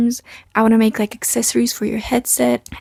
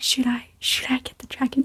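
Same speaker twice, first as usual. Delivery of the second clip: very quiet, soft, hushed whisper; 9 dB quieter than usual. Retelling how a buyer asked her husband about the dragon: imitating a whisper. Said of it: "whispering to her husband".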